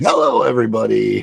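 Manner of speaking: slightly off voice. Greeting everybody on joining the panel: voice a little off. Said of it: "My voice is a little off".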